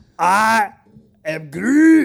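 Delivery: rough, gravelly cartoon-villain voice, very high, very loud. Taking a turn at saying a movie line in the Gru voice. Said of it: "try to do the I am Groot in the Gru voice".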